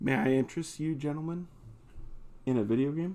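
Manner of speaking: alluring, seductive, inviting voice. Offering a video game to two guests: seductive tone. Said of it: "That sounded seductive".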